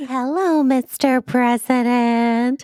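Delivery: put-on baby-talk voice. Acting out Stockard Channing interrupting Sam: Stockard Channing baby voice. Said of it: "using a baby voice".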